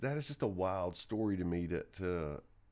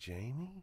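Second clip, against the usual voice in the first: put-on quiet voice, higher and quieter; 6 semitones higher, 5 dB quieter than usual. Retelling mom calling to her son holding a gun: imitating mom speaking really quietly. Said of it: "really quiet".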